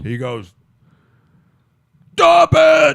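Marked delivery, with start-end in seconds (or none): 2.1-3.0 huge booming bellow, very loud and high. Retelling how Captain Wasted stepped into a fight, big bellowing voice. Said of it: "He had this big bellowing voice".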